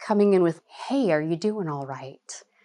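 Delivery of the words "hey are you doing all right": relaxed broadcaster voice. Speaker demonstrating how to approach someone who is yelling: calm SNL NPR voice. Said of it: "And you're calm".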